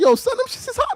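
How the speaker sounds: very high, too-nice, overly friendly tone. Imitating a new york robber who comes up friendly: imitating an overly friendly robber. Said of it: "being too nice to you for no good reason".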